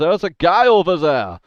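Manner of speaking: very loud, high, bad fake German accent. Game master voicing one of the characters who notices the player: bad German accent. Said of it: "In his bad German accent that he does".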